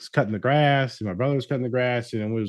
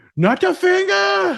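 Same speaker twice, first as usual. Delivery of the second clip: play-acted very high, loud, shrill, terrified toddler wail; 6 dB louder than usual. Retelling how a two-year-old niece reacts when asked to hold hands: imitating a terrified toddler. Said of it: "she'll, like, melt down and run away".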